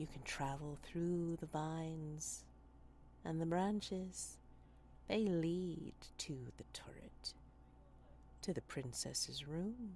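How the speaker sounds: willowy, flexible, dry, gossipy tree voices. Voicing the trees as they guide the player: dry, gossipy tree voices. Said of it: "I think you start to hear their voices. You start to hear their way of talking, dry and dry, but possibly also flexible and willowy and just gossipy even, ... dry and dry, but possibly also flexible and willowy and just gossipy even".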